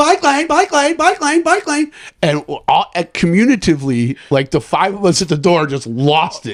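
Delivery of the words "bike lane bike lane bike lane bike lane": play-acted very high screech, over and over. Retelling a cyclist passing girls in the bike lane: imitating someone screaming. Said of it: "Screaming in their ear".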